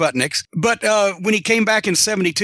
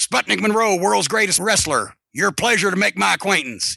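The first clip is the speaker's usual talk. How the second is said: put-on gravelly wrestler voice. Retelling meeting Sputnik Monroe as a manager, imitating Sputnik Monroe's gravelly voice. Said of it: "he still had the gravelly voice".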